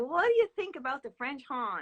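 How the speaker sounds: put-on loud, strong, sing-song New England accent. Retelling a father asking about the French horn, New England accent. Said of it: "very New England accent".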